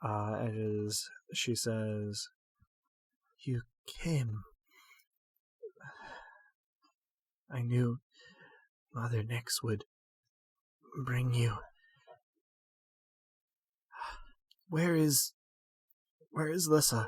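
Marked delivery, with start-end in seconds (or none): 3.4-17.1 rough, ragged voice that keeps cracking. A narrator voices a woman who opens one eye to regard the listener: ragged, cracked voice. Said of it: "Her voice is a little ragged and kind of cracked".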